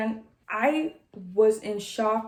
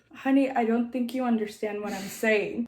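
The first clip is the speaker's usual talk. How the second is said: plain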